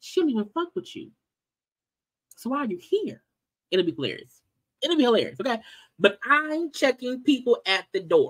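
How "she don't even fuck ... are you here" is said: soft, quiet, sweetest, nicest voice. Retelling what a woman said to someone, imitating a quiet, nice voice. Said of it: "saying in the quietest, nicest voice".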